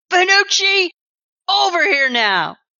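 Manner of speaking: high-pitched yell. Recounting chaos inside a building, the speaker voices a man calling out: retelling a man's yell. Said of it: "you will hear a man yell".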